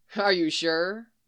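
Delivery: light, joking, playful teasing. In a story, Bucky answers the other man's refusal, teasing. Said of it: "Bucky teased".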